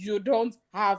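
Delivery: strong, firm, unbending fatherly tone. Retelling what their dad said back to them; imitating a dad's strong voice. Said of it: "His voice was actually strong".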